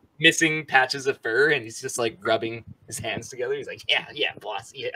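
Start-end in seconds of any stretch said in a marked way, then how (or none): 3.9-4.9 scruffy, ratty rat creature voice. Playing a rat that others overhear through a grate, rat voice. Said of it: "That was a fantastic like, rat voice".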